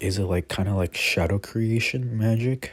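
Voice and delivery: ordinary talk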